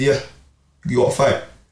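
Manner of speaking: ordinary talk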